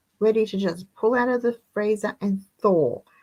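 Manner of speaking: ordinary talk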